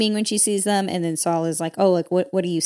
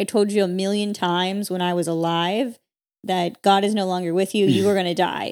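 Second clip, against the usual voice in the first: ordinary delivery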